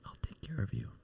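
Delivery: soft, loving, gentle whisper. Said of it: "the angels will whisper in your ear lovingly".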